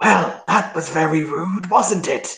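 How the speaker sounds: high-pitched, obvious stage whisper. Narrating a game scene, a character leans in to remark on someone: obvious stage whisper. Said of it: "in a very obvious kind of I'm whispering voice".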